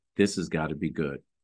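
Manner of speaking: ordinary talk, nothing marked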